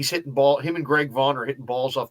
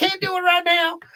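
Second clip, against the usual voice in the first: very high-pitched squeaky voice; 3 dB louder than usual. Retelling someone declining a radio interview, in a very high-pitched voice. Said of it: "in a real high pitched voice".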